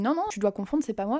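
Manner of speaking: normal talking voice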